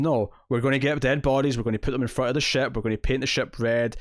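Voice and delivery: ordinary talk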